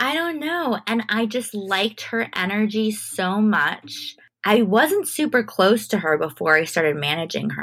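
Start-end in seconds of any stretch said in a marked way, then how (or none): 0.0-0.8 playful high-pitched put-on voice. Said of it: "I was just like".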